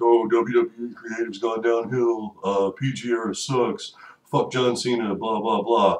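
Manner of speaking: dismissive, griping complaint, acted out. Mocking wrestling fans who complain online, as a mock-complaining wrestling fan. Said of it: "They are fans of bitching about wrestling".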